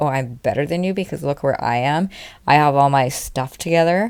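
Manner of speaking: ordinary talk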